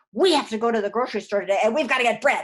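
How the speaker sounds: loud, fast, angry voice. Explaining how babies react to tone, the speaker demonstrates an angry voice. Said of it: "If you have an angry voice".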